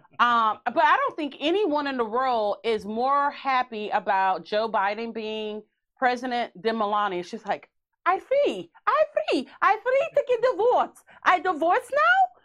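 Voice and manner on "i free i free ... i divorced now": very high, squeaky put-on voice. Joking about a president's wife being free to divorce: imitating Melania. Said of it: "Is that how she talks?".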